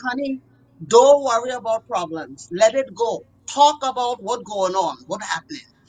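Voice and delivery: put-on Trinidadian accent. Quoting advice heard as a child, Trinidadian accent. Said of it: "In their Trinidadian accent".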